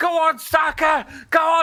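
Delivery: put-on drunk soccer mom voice, screaming.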